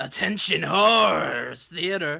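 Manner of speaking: very slow, every word stretched out. Announcing the start of Attention Horrors Theater: talking like Vincent Price. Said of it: "starting to talk like Vincent Price now".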